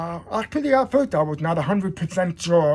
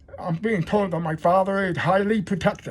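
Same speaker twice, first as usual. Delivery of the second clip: plain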